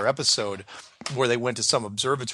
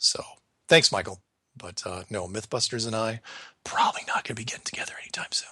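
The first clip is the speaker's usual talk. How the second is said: speaking in a whisper; 4 dB quieter than usual. A host just out of surgery answers a viewer, whispering. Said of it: "Sorry if I'm whispering".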